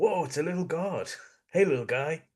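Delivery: put-on Australian accent. Retelling what an Australian guy said, Australian accent. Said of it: "in his Australian accent".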